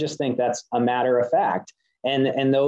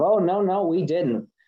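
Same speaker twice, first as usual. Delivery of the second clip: high, drawn-out, mock, bristling defensive tone; 6 semitones higher than usual. Retelling a meeting with the head of the DCP, imitating her mock-defensive reply. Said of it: "She got all defensive".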